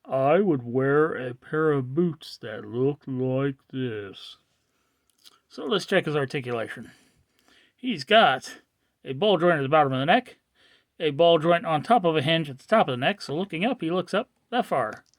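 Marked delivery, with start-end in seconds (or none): 0.1-4.3 very slow, drawn-out, deliberate delivery. Addressing their honey, who may be listening, the speaker repeats the remark, said again slower. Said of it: "I'll say it again slower".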